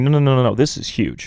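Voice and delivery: ordinary talk, nothing marked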